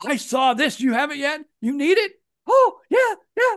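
high squeaky loud voice. Acting out one fan calling another, in a Mickey Mouse voice. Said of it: "That was a good Mickey Mouse voice".

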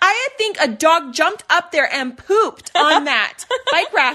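very loud, high yell. Retelling a friend calling out to her nanny: imitating a friend yelling. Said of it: "yelling to her nanny".

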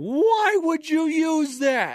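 very high-pitched, shrill, loud, yelled screaming. Retelling a golf story, the speaker acts out a man screaming up from the hole. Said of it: "he's screaming this up".

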